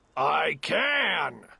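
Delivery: grumbling, growling bear voice, "can" drawn out. A narrator reads a story where the bear answers the rabbit, growling. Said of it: "growled the bear".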